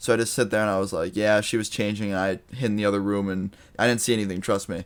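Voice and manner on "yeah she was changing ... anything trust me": plain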